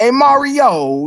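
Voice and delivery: very high cartoon voice with a stretched-out word. Reviewing the Super Mario Bros. Super Show, the speaker imitates Luigi: cartoon Luigi voice. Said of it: "he does that voice".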